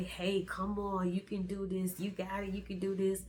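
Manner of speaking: plain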